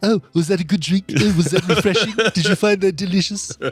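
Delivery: high put-on cartoon voice. Imitating own mocking remarks about someone's drinking: Stewie voice. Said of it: "it's Stewie kind of".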